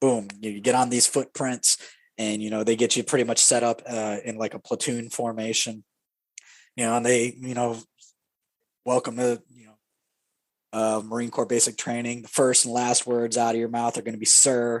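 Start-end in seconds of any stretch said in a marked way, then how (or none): none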